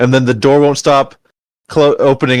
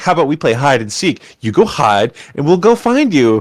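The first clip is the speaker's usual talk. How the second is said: sing-song voice dripping with sarcasm; 3 semitones higher than usual. Telling a story, quoting what she said to the group; retelling a sarcastic suggestion. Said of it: "How she said it sarcastically".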